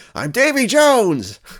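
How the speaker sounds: screeching, shrill, very high-pitched yell. Pressed again and again to give his name, he finally answers: yelling. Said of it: "don't yell at me".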